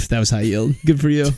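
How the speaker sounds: put-on sarcastic delivery. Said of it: "when people say it sarcastically".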